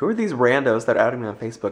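ordinary talk

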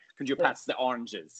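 fake, put-on German accent. Mocking a guy who swaps 'the' for 'za', fake German accent. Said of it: "he'll throw in a "za" instead of a "the"".

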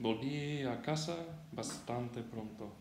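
ordinary talk

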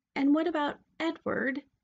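high, unsure, hesitant voice. Asking her mother about the one she holds in her lap, high, uncertain voice. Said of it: "her voice high and uncertain".

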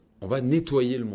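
ordinary talk, nothing marked

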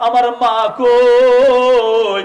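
slow crying, rising in loudness.

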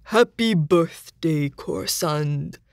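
unusually, stiffly formal delivery. A narrator reads one character's words to another, oddly formal voice. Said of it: "said in an oddly formal voice".

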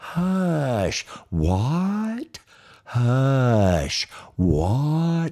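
put-on very slow, gossiping old lady voices. Retelling how gossiping church ladies talked: imitating gossiping old church ladies. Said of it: "the little old gossip and ladies in his church".

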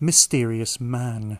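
slow, drawn-out sarcastic delivery.

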